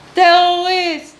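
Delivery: loud high-pitched shout.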